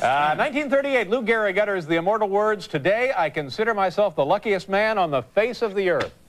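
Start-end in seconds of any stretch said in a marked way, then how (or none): none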